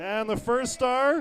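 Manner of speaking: loud, high, arena announcer call.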